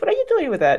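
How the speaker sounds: very mocking, high-pitched jab.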